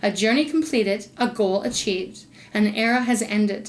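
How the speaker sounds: ordinary talk, nothing marked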